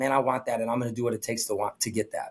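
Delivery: ordinary delivery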